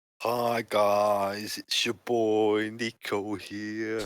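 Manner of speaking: mock impression voice. Introducing oneself to the game while mocking another player's intro: mocking imitation of another player. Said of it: "I feel mocked".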